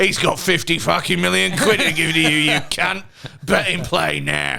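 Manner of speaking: pushy, hard-sell salesman delivery. Acting out a betting advert voiceover: Ray Winstone voice. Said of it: "then Ray Winston pops up".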